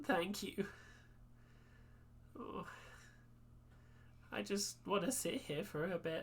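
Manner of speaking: soft, breathy speech broken by sobbing. Game narrator voicing a character the player just reassured, talking between sobs. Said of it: "between sobs".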